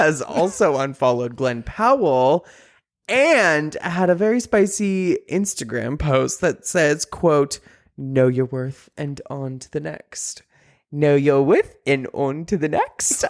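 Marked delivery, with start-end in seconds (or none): 10.9-13.2 failed attempt at a French accent. Repeating a quoted Instagram post to a co-host: attempted French accent. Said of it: "I can't say it in a French accent".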